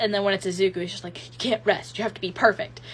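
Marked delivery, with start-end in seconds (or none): none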